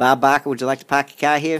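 Boston accent, popped out, commercial announcer style. Showing how they sometimes pop off with a boston accent. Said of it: "every once in a while I'll pop off with a Boston accent".

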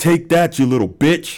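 high, loud screaming in a taunting tone.

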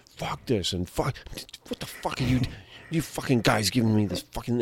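ranting in a whisper. Retelling how Gordon Ramsay reacts to the hot wings: imitating Gordon Ramsay swearing. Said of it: "he's like".

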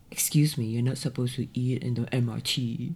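nosy busybody scolding tone. Retelling being told off while eating on the train: imitating a busybody scolding. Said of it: "some busybody Singaporean was like".

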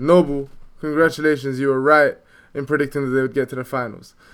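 ordinary delivery

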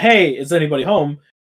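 ordinary delivery

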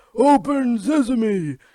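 very high, loud cartoon squeal. Retelling an edited SpongeBob clip of Patrick: Patrick Star voice. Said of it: "he's like".

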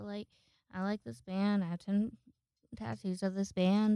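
plain

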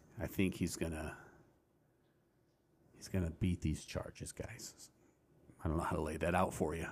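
hushed, very quiet, soft talking. Telling listeners an opinion on a political arrest: soft voice. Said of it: "I'm talking in my soft voice now".

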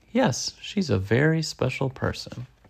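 ordinary delivery, nothing marked

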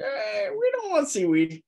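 birdlike character voice. Voicing a bird character in a role-play scene, in bird voice. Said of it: "You guys like my bird voice?".

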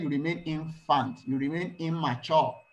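ordinary talk, nothing marked

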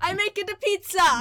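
put-on German Italian accent. Playing a character in a comedy role play: bad German-Italian accent as Nightcrawler. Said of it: "It's a little bit Italian".

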